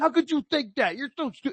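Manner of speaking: heated, scornful, high indignant yell. Describing people yelling at each other: imitating someone yelling. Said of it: "start yelling at each other and be like".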